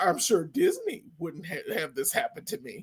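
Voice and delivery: sarcastic, smart-mouthed, snarky cartoon bird voice. Retelling a line a movie bird said: imitating a snarky bird. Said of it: "he was snarky".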